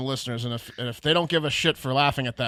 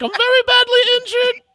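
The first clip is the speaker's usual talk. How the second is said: very high, very loud, shrill flamboyant whine; 10 dB louder than usual. Retelling what the injured dog walker said: imitating the dog walker's voice.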